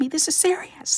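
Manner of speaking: put-on furious little kid, very high and loud. Retelling how her son asks for his library books: imitating her son, annoyed. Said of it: "he gets so mad".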